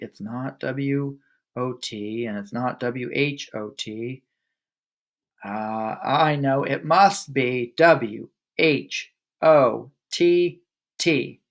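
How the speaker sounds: very slow, halting, unsure, hesitant delivery. After hesitating, a boy answers a spelling demand, very slowly. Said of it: "he said very slowly".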